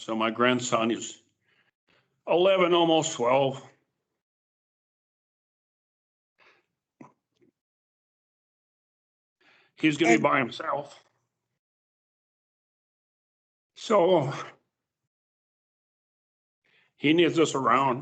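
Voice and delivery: choked up with emotion. Doug explains his grandson will be alone this summer, choked up. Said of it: "Doug's a little choked up".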